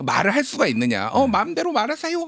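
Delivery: high-pitched scolding voice. Describing how a vice minister was scolded, impersonating the scolder. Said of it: "지금 약간 성대모사하신 겁니까?".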